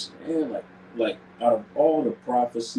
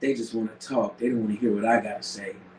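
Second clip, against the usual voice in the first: usual speaking voice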